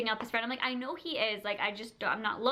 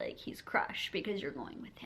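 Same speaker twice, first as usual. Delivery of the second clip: soft, hushed whisper under the breath; 6 semitones lower, 7 dB quieter than usual. Retelling what she whispered about Fred crying in the back, imitating a whisper. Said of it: "she was whispering it".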